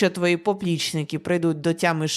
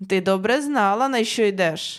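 loud shouting, yelling; 3 semitones higher than usual. A man answers a pleading girl, shouting in reply. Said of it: "вигукнув у відповідь чолов'яга".

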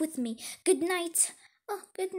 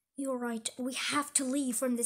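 ordinary talk

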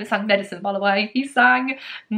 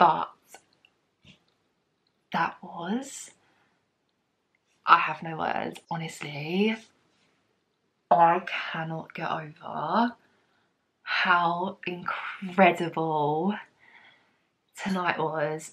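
quiet, soft, hushed voice; 4 semitones lower, 6 dB quieter than usual. Recording at 1:30 in the morning after an incredible night, talking quietly. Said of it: "I have to talk quietly".

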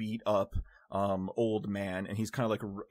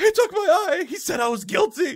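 very high, very loud, shrill, frantic panicked cry; 11 dB louder than usual. Voicing a bleeding old man who holds his eye: old man panicking. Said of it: "he's panicking".

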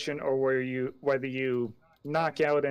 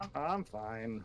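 very soft, quiet, flat and bored tone; 3 semitones lower, 10 dB quieter than usual. Answering when asked whether everything is good: almost bored. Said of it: "You sound almost bored".

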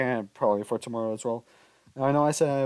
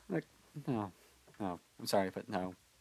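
usual speaking voice

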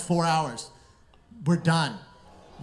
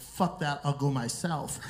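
usual speaking voice

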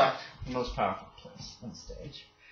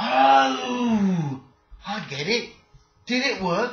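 very slow, pitched-up, dim, earnest confused bewilderment; 9 semitones higher, 6 dB louder than usual. Game master voices a character in a tabletop game, very confused. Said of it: "He's very confused. [name]'s not terribly smart".

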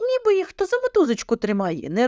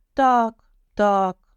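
halting, stammering, stuttering; 2 semitones lower than usual. The young lady answers the shepherd, stammering. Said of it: "затинається паночка".

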